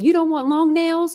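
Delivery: very high-pitched lady voice with rising questioning intonation. Retelling a skit in which the nail salon lady asks a customer: imitating the nail salon lady from a skit.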